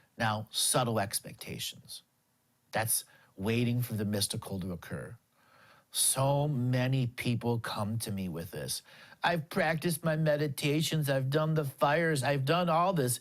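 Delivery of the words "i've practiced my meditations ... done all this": mock derisive, scoffing tone. Quoting people who expect instant gratification, mocking voice imitating people. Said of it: "I'm using a mocking voice".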